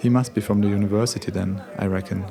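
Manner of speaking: ordinary delivery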